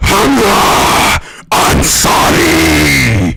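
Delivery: booming, very loud metal-vocalist death growl. Giving Hamza a shout-out in the speaker's best attempt, death growl voice. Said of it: "do my de- best death growl voice".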